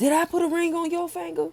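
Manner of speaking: very high, aggressive, chest-puffed confrontational outburst. Retelling a man's remark, imitating an aggressive outburst. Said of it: "he was all up in his chest".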